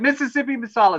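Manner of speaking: put-on full-on high-pitched scream. Retelling how mom reacted while watching the movie: imitating mom screaming. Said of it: "my mom just screamed at the screen".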